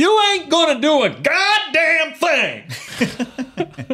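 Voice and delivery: very high, slow, drawn-out, swooping, furious shouting. Imitating an actor whose picture is up in the room: Samuel L. Jackson shouting. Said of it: "He's always shouting".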